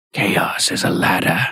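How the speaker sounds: low creepy voice. Recapping a TV scene, quoting the line in a low creepy Littlefinger voice. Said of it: "got down low and did the creepy voice".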